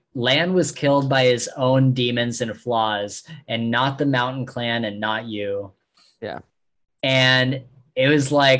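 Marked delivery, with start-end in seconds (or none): none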